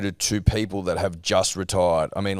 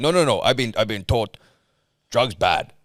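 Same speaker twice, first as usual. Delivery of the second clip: put-on caveman accent; 2 semitones higher than usual. Mocking how some people talk about steroids, the speaker uses a caveman accent. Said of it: "Caveman accent".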